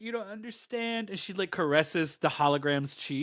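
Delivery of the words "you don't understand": high, tearful, tear-soaked crying voice. Retelling a comic scene where Marie pleads: imitating a character crying. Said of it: "Marie's, like, crying".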